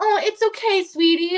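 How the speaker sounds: patronizing, talking-down voice. Retelling how a man talked to the speaker like a child, imitating a condescending voice. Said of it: "Like this condescending voice".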